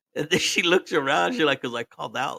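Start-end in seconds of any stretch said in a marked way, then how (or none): 1.6-2.4 put-on whisper, much quieter. Speaker retelling a woman's answer when asked why she was whispering: imitating a whisper. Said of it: "why are you whispering?".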